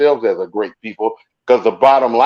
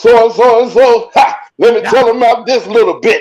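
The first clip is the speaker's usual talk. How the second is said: loud, very high-pitched Southern preacher voice; 11 semitones higher, 5 dB louder than usual. Imitating a church preacher's style, giving Southern preacher voice. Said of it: "That sounded like a, a, a Southern preacher".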